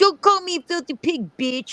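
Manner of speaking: put-on anger, pitched very high. Imitating a partner snapping back in an imagined argument: imitating Rob arguing back angrily. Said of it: "And he's like".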